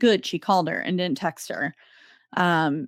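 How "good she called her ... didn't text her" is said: usual speaking voice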